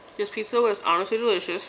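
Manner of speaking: chewing while talking, mouth full. Reviewing a pizza for the audience while still chewing, talking with mouth full. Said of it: "Let me stop chewing for a second".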